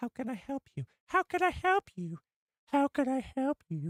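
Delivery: very high, feminine character voice. Speaking to chat, repeating a character's line in a Barriss Offee impression. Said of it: "gave an impression".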